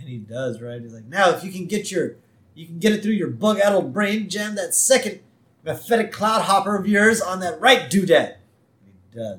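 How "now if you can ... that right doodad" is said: raised, annoyed, exasperated commanding voice. Retelling a man's orders to Smithers, in a retold raised voice. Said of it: "he raises his voice and says".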